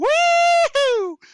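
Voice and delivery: shrill, very loud, high, stretched-out woo-hoo whoop. Voicing a man inside a mine after an explosion: cheering whoop from inside. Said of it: "You just hear one guy go".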